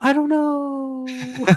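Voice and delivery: imitated fading whisper. Retelling a scene where Snow Fairy fades away, imitating Snow Fairy's fading whisper. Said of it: "fading away and whispering just goes".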